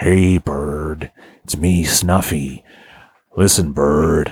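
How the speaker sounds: very low, slow, drawn-out character drawl. Voicing a puppet character for another speaker: Jack Nicholson voice as Snuffleupagus. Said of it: "Jack Nicholson as Snuffleupagus".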